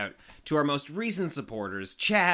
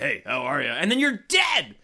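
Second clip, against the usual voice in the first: put-on spooky ghoul voice; 4 dB louder than usual. Acting out what she could suddenly say, in a Beetlejuice voice. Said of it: "Did you just do Beetlejuice?".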